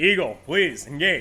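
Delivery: put-on radio announcer-style voice. Giving commands to Eagle for a simulation in a put-on radio voice. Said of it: "I'm doing like my radio voice".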